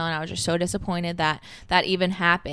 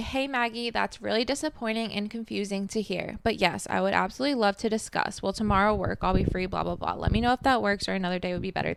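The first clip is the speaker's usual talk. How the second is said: ordinary talk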